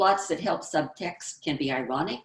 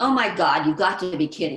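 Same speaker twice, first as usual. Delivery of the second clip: sarcastic, loud delivery; 5 dB louder than usual. Showing how a sarcastic girl turns down a date: sarcastic line as a character.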